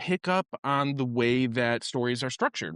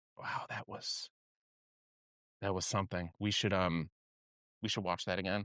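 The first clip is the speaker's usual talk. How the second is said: grave, halting, earnest, solemn teacher voice; 6 semitones lower, 10 dB quieter than usual. Retelling what the teacher said to the silent class: imitating a teacher speaking solemnly. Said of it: "looks at everybody very earnestly, very solemnly".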